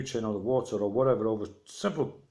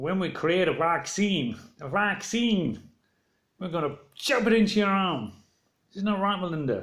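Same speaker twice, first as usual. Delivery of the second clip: high-pitched cartoon frog puppet voice; 6 semitones higher than usual. Quoting what somebody said to Melinda, put on a Kermit the Frog voice. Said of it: "Kermit the Frog voice".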